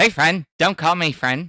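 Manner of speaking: mock cartoonish Canadian accent. Recalling how everyone did the bit, South Park Canadian accent. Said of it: "doing their best South Park Canadian uh impression".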